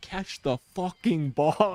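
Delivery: put-on livid, furious coach yelling. Retelling a coach yelling at a player who dropped a pass: imitating a livid coach yelling.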